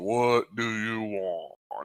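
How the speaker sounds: very deep giant voice, low and soft. Storyteller voicing a giant answering from the doorway, very deep giant voice. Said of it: "His very deep, you know, giant voice".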